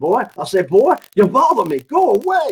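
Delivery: cartoon rooster voice with swooping, swinging pitch. Imagining the reply expected to come through the computer, in a Foghorn Leghorn voice. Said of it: "expecting kind of the voice of Foghorn Leghorn".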